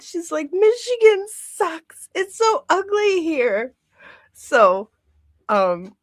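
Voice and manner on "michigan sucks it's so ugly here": weepy sobbing, very high, tearful whine. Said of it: "she was literally crying like".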